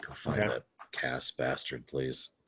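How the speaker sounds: flat, lifeless, low, hushed near-whisper monotone. Voicing a character asking someone to find Louis Cass: dead low tone. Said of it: "my tone is just dead, like low tone".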